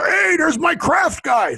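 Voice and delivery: bad announcer voice, very high, drawn out. Retelling a friendly greeting on a delivery route: Harry Carey impression. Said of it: "my worst Harry Carey impersonation".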